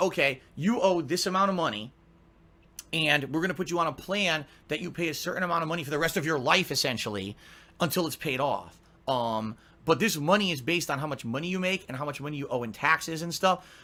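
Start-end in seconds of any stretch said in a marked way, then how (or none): none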